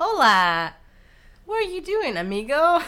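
very high, loud, swooping sing-song cartoon voice. Mocking the actors in a movie, imitating Dora the Explorer voice. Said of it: "like I was watching Dora the Explorer saying".

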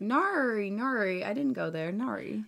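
slow, drawn-out put-on Australian accent on "nari". Mocking the way Australians talk: mock Australian accent. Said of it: "a roast of Australian accents".

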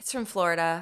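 put-on meek, timid tone. Retelling how they answer people who doubt their vaccine card, mock-meek reply. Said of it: "And I just meekly go".

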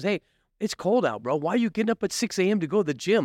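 wheedling, coaxing, tempting voice. Acting out the inner bitch voice that talks people out of the gym: acting out tempting inner voice. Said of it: "It talks to us".

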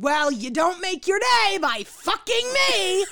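very high, shrill, drawn-out rising yell. Retelling what she yelled at him for starting without her, retelling a yell. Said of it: "she yelled at him and said".

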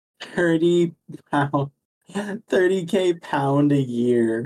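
slowed, high, silly, stupid-sounding delivery.

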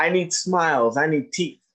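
normal talking voice

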